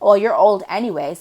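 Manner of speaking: put-on snarky tone. Retelling the narcissist's remark at a restaurant: imitating a snarky comment. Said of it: "The narcissist makes a snarky comment".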